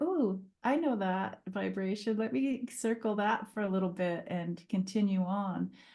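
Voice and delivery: normal talking voice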